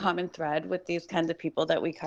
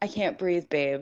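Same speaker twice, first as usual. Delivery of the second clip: put-on pleading, begging tone. Retelling a recorded plea from a trapped man: imitating someone begging.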